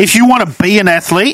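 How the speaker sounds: talking very loudly. Disagreeing in a group discussion about athletes as role models, yelling. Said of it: "Why are you yelling?".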